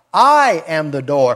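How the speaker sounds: "I" hit hard at the start. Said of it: "there's emphasis on the pronoun "I."".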